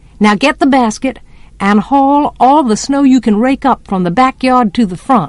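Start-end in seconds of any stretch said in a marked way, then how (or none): none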